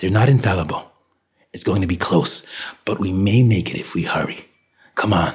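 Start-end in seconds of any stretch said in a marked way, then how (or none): none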